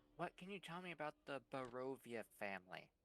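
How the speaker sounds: soft, very quiet, barely-there half-whisper. Playing a character asking a shopkeeper about a family: half-whispering. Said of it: "I'm going to whisper to him".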